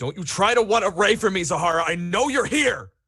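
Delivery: booming, very loud, very high-pitched voice. A man rounds the corner calling out to zahara in a booming voice. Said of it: "that booming voice of his".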